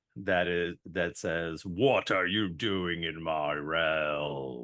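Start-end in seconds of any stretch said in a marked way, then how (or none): 1.6-4.6 grand, slow god voice, "realm" drawn out. A speaker asking the other speaker how they'd react to hearing this, booming voice. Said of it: "hearing a booming voice".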